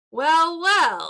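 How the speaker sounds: loud, snarling thug voice. A narrator voicing a thug who greets the approaching group, snarling. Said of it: "he snarls".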